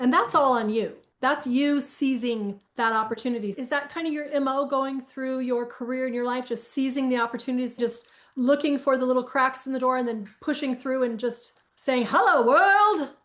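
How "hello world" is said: high, loud, slow Broadway belt. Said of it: "in a Broadway voice".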